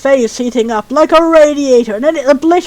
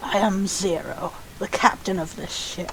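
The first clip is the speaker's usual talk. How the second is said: raspy, cold, slow whisper; 6 semitones lower, 15 dB quieter than usual. Voicing a ship captain introducing himself: Zero voice, raspy but cold. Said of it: "I should be going for a voice that's raspy but cold".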